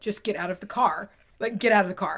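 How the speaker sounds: put-on deadly serious voice. Retelling a sudden order from the driver: imitating a deadly serious voice. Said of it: "in a deadly serious, no bones about it voice".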